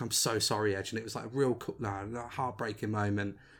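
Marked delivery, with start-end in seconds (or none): 0.0-0.9 put-on desperate pleading tone. Recounting a man on his knee apologizing, imitating begging. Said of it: "he's like begging".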